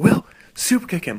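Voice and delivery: loud, high shout. Retelling a tag partner calling out a move during a run-in: imitating Ben yelling. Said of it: "he yells out".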